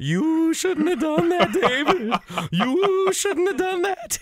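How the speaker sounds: very high-pitched, slow delivery, repeated. Quoting a line from the movie Deep Cover: Laurence Fishburne impression. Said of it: "Al Davis sounds like Fishburne at the end".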